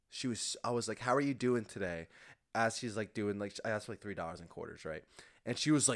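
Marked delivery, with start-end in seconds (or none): none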